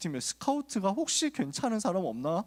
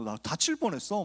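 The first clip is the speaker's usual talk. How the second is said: ordinary delivery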